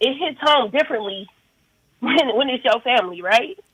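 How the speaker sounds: choked-up voice, catching and breaking with emotion. Talking about a cousin being unsafe and how it hits family, choked up. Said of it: "I'm getting choked up".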